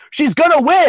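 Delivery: high, petty, loud shout. Acting out how he turned and shouted it to everybody, retelling a shout. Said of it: "Shouting it to everybody".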